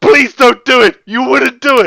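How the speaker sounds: shrill, high, loud, terrified voice. Retelling a story scene where a terrified being begs: imitating a terrified plea. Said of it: "the being that he's using it on is pooing his pants".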